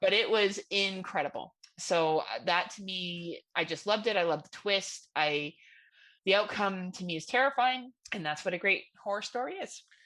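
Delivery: ordinary talk, nothing marked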